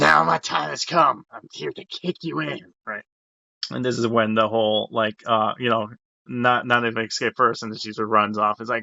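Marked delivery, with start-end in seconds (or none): 0.0-2.7 put-on gruff comic voice, higher. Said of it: "as Danny DeVito".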